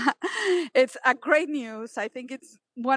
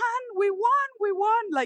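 put-on scream, much higher, slower; 9 semitones higher than usual. Retelling running to her husband's office with the news: retelling a scream. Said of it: "I start screaming".

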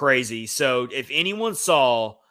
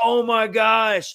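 put-on high, raw yelling; 9 semitones higher, 3 dB louder than usual. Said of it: "just yelling".

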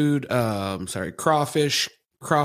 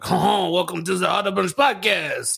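bad, fake put-on Louisiana accent; 6 semitones higher than usual. A co-host opens the auto bunch podcast in a bad louisiana accent. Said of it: "I was gonna do my Louisiana accent".

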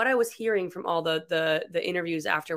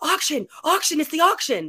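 very high, shrill, swooping, repeated hollering; 10 semitones higher, 5 dB louder than usual. Retelling two people jumping up during a premiere, imitating people yelling. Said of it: "start yelling".

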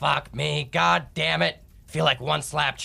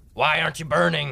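loud yelling; 3 semitones higher than usual. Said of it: "Is he always gonna be yelling".

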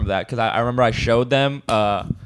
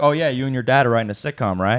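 mock joking child voice, faster. Speaker retelling what another kid said to them, retelling a kid's joking remark. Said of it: "the other kid jokingly says like".

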